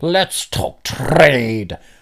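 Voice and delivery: put-on lisping troll voice, trade drawn out. Mocking someone's odd accent on a stock phrase, put-on troll voice with lisp. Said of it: "It's like a troll with a lisp".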